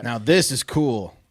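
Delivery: loud, facetious, very slowly drawn out. Reacting to a news item about solar satellites, facetious tone. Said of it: "are you being facetious again?".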